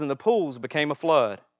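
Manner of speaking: usual speaking voice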